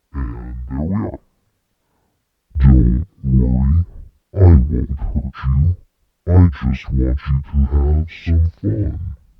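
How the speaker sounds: voice dropped an octave, very low, loud, booming. Demonstrating pitch shifting, speaking in a voice pitched down an octave. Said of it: "We'll go down".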